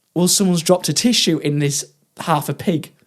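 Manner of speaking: plain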